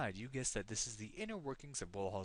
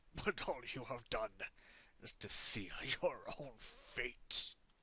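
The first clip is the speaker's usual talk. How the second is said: wheezy voice, wheezing while speaking. Reading out the dying villain's last words, speak wheezing. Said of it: "He wheezes".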